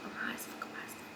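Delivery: very soft, breathy whisper.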